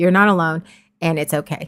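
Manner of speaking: normal talking voice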